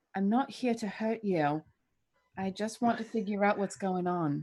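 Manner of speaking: very quiet, hushed murmur under the breath. Reaching toward a vent, speaking in character: very quiet voice. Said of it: "saying very quietly".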